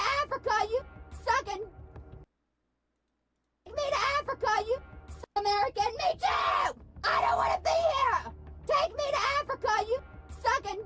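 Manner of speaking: screaming, yelling and shrieking. Woman in a played clip, screaming. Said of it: "is she purposefully screaming like that".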